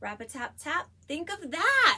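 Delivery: excited, energetic, expressive, high and loud. Reading the line first for the listeners to echo, with more energy and expression. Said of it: "We read it with more energy and expression".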